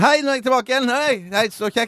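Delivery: put-on enthusiasm. Radio host, asked by his co-host for more enthusiasm, greets again: put-on enthusiasm. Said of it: "Enda litt mer".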